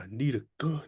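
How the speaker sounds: stiff, halting delivery. Asking why an actor sounded like he couldn't speak: Keanu Reeves impression. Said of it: "Why did Keanu Reeves sound like he just couldn't speak?".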